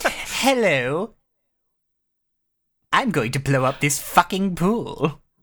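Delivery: exaggerated cartoon villain voice. Imagining Frieza doing all this, the speaker does a Frieza impression. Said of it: "I'm just imagining Frieza doing all of this".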